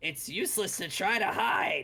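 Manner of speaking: tiny creature yelling all-out, small and high. Narrator voices a kobold calling out over loud waves, small voice yelling with all its might. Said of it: "a small voice yelling over the loud waves around that just yells out with all of its might".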